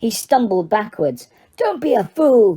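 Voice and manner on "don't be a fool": snarling, villainous tone. Narrator reading the face's line to Harry, snarling. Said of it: "snarled the face".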